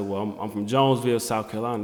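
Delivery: normal talking voice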